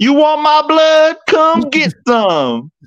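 very high-pitched, drawn-out, slow yell. Quoting a movie line the family yells randomly, retelling a yell. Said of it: "We just yell randomly".

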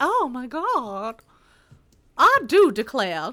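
loud, slow, swooping Southern drawl, God stretched out. Narrating a woman pretending to faint, in a Foghorn Leghorn-ish Southern belle voice. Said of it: "That sounded more Foghorn Leghorn than Southern Belle".

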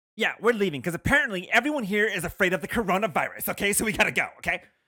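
play-acted, loud, high, showy complaining. Retelling what a maskless woman said while leaving a store, mock-loud on purpose. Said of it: "being all loud on purpose so everyone hears her".

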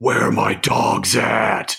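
slow, drawn-out, menacing, creaky rasp. Podcast hosts discuss Dog Pound, imagining a line from Shredder, slow, menacing Shredder voice. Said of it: "in like a slow, menacing voice".

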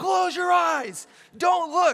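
slow, high, drawn-out, urgent yelling. Retelling a film scene's warning line: imitating Indiana Jones yelling. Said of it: "he yells".

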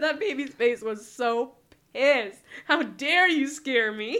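talking through laughter. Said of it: "I couldn't stop laughing".

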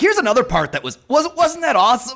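fast, high, swooping delivery with wide pitch swings. Joking about gushing over a movie: imitating Chris Farley. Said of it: "doing the Chris Farley thing".

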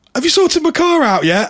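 very high, loud shout. Telling a joke, the penguin calls to the mechanic: shouting. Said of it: "And he shouts".

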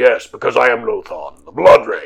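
low put-on character voice. In a role-play game, a player answers another player in character, in a very deep Lothan voice. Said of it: "It is very deep".

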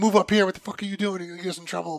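mock annoyed, high, angry yelling. Retelling eighth graders getting mad at practice: imitating someone yelling. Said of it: "they're, like, yelling at me".

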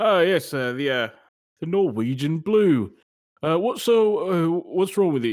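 put-on British accent.

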